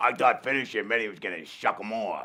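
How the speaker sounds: very deep, dropped low man's voice. Retelling what a date said after the game: imitating the guy's voice. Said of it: "Can I hear that neighbor's voice again?".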